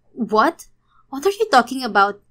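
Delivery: surprised, shocked, startled outburst of disbelief. Reading a story aloud, a woman told she is no longer the girlfriend: shocked exclamation. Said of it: "Gulat na bulalas ng babae".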